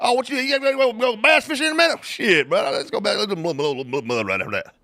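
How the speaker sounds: put-on rural twang. Greeting good old boys while hunting in South Georgia: redneck twang. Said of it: "little redneck twang on there for you".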